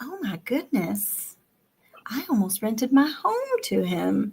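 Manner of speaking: put-on soft, sing-song little old lady voice. Retelling your own reaction in a conversation, speak in an old lady voice. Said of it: "I give her the old lady spiel".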